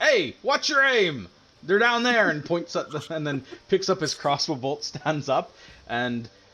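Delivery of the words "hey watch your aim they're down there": shrill, very high, loud shouted yell. Voicing a smuggler warning the ballista gunner: smuggler shouting a warning.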